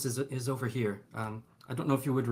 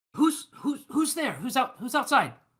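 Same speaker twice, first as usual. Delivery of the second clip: calling out, much higher pitch; 14 semitones higher, 3 dB louder than usual. Player voicing their character behind a door, calling out. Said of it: "he'll call out".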